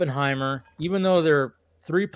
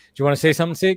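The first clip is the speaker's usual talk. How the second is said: plain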